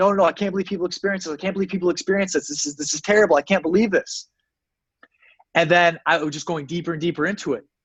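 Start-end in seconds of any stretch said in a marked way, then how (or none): 0.0-4.3 put-on desperate, anguished, protesting yelling cry. Recounting a hellish psychedelic trip, the speaker reenacts their own yelling. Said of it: "I remember yelling like".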